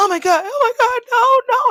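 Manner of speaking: very high, loud crying screams. Retelling Jax opening the door to a wrecked bedroom: imitating Jax crying out. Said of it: "That's what she's saying".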